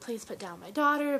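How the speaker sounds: acted-out tearful crying voice. Recounting a fight, quoting her own plea to a man grabbing her daughter, retelling her tearful plea. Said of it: "and I was crying. I was like".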